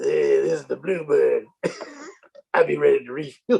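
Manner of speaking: put-on, very deep, bassy voice. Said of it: "put some bass in your voice like Slappy".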